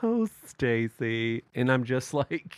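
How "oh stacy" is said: meek, mild, unraised, acted passive voice. Recounting a child kicking her mother, the speaker acts out the mom: imitating mom, voice not raised. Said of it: "there was never a raised voice".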